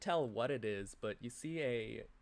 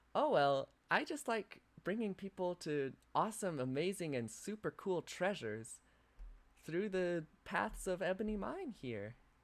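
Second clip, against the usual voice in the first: small, high, tiny creature voice; 6 semitones higher than usual. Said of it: "a small voice begins to speak to you".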